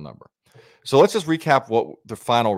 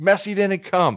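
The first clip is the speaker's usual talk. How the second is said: high-pitched put-on screaming; 9 semitones higher than usual. Retelling what a player did as the crowd cheered: imitating Ronaldo screaming. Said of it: "he literally screaming".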